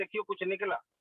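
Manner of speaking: ordinary talk, nothing marked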